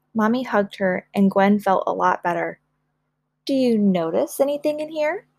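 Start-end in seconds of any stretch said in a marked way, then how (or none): 3.5-5.2 smiling, warm delivery. Narrating a story, the mother asks her child a question with a smile. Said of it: "Mommy asked with a smile".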